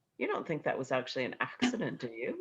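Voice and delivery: dry, deadpan delivery with roaming pitch. Retelling what he said one day in his office: imitating a deadpan question. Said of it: "he looked at me deadpan and said".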